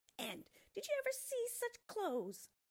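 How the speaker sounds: very high, shrill, loud jeering and mocking. The others in the tree eye Thumbelina's clothes and mock her: taunting. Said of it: "they taunted".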